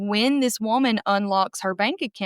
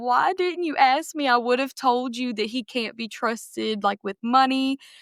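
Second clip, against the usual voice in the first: play-acted, tearful voice with words pushed through tears; 3 semitones higher than usual. Retelling asking Bryce why he didn't ask first: reenacting crying while talking. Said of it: "I'm crying".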